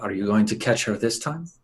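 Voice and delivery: hushed, half-whispered voice kept low. Playing a character who asks another character a question: half-whispering in character. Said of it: "I whisper to Violet".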